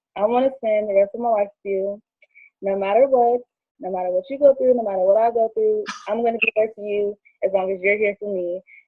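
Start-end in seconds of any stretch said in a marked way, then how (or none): none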